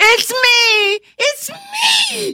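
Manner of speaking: very drawn-out, high, slow exultant shout of triumph. A man whose spell was just undone shouts, shouted exultantly. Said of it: "he shouted exultantly".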